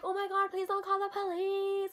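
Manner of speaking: mock sobbing, tearful, desperate crying. Retelling how the sister begged not to call police: imitating sister crying. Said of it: "my sister started crying".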